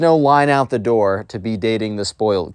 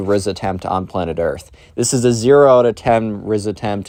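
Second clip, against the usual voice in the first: plain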